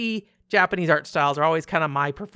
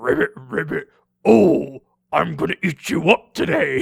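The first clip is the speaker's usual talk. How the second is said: loud, rough, menacing villainous frog croak; 5 dB louder than usual. Showing how voice lines for a bad frog character sound: bad frog voice. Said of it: "a frog that's like a bad frog".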